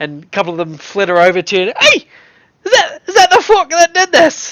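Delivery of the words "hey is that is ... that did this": very high-pitched put-on Scottish pixie accent. Voicing a pixie who confronts the arriving party: put-on scottish pixie accent. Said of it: "my super good wormy accent".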